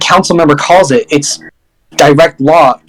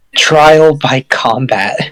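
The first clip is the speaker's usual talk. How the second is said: whispered speech. Voicing a council member who leans in with a demand: whispering. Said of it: "leans in and just whispers".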